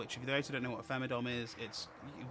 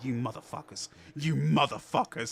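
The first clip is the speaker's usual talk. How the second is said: put-on sharp snapping tone, louder; 7 dB louder than usual. Retelling how Sophocles reacted during a class: imitating Sophocles snapping. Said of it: "just snaps to us".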